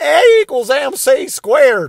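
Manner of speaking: Southern Alabama drawl, very high and very slow. A comedian retells Bill Burr's joke, doing Albert Einstein with an Alabama accent. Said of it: "what if Albert Einstein was from Alabama?".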